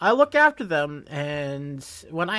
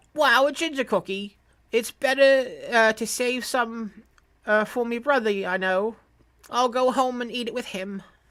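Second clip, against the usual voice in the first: put-on British accent; 7 semitones higher than usual. Voicing a character who is handed a cookie, in a British Englishman accent. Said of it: "I gave him like a British Englishman accent".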